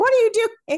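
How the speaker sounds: sharp, high, loud, startled and alarmed tone.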